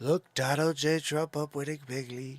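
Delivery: loud declaiming voice. Showing the impressions used to be done: Donald Trump impression. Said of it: "I used to do the Trump impression a lot".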